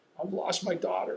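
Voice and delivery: put-on crying. Recounting walking out of a daughter's room with Wanda, retelling crying. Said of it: "I am just crying".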